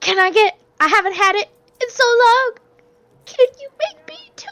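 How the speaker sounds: very high, squeaky voice with pitch climbing up. Placing an order, in the really high-pitched Daisy voice. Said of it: "I spoke in the really high pitched Daisy voice".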